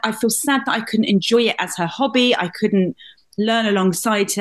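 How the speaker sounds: ordinary delivery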